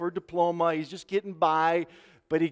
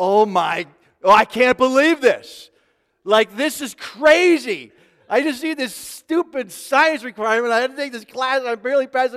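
mock-frustrated, higher and louder; 7 semitones higher, 8 dB louder than usual. Retelling how a student reacted during an exam; imitating a frustrated student. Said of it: "verbalizing some of his frustration".

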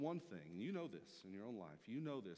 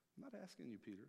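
ordinary talk

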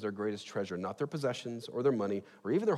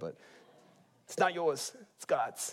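slow, drawn-out, put-on New York accent; 4 semitones higher than usual. Quoting how the kids used to rebuke people, in a put-on New York accent. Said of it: "I go to like New York accent when I do that".

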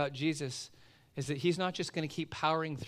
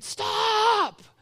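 very high, stretched-out, drawn-out panicked scream; 10 dB louder than usual. Retelling how a panicking swimmer screamed: imitating someone screaming. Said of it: "she starts screaming".

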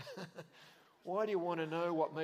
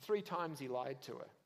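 usual speaking voice

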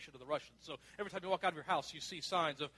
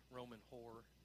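low, hushed half-whisper under the breath; 6 semitones lower, 14 dB quieter than usual. Imagining people insulting someone under their breath: imitating a quiet half-whisper. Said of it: "whispered quietly underneath their breath".

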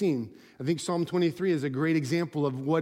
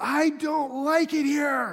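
very high, long drawn-out acted child's scream; 10 semitones higher than usual. Retelling a little guy running away toward home: imitating a child screaming. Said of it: "he's screaming".

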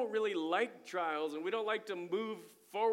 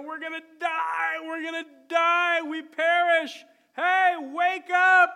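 very loud, frantic, drawn-out, panicked wailing; 8 semitones higher, 12 dB louder than usual. Retelling what the people in the storm cried out to Jesus, imitating panicked crying out. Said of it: "And they're crying out".

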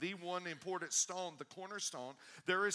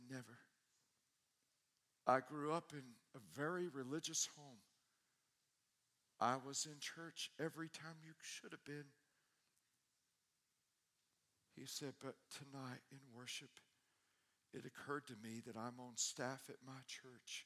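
put-on trembling, quivering voice, lower and quieter; 4 semitones lower, 9 dB quieter than usual. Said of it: "And his voice was quivering".

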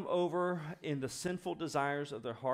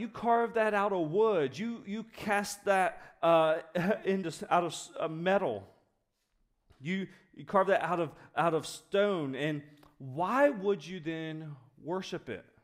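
really sarcastic voice; 3 semitones higher, 4 dB louder than usual. Retelling how the Bible treats idol makers: imitating God, sarcastic. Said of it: "addresses idols in a really sarcastic way".

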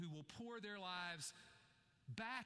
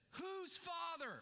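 booming, very high, loud joyful call; 10 semitones higher, 3 dB louder than usual. Retelling how a man gathers the men together for prayer: retelling a loud joyful call. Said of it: "he loudly and joyfully says".

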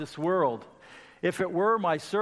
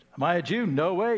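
put-on sarcastic governor voice. Retelling the governor's reply to Jesus's question: imitating Pilate's sarcasm.

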